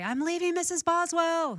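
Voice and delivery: sing-song called-out voice.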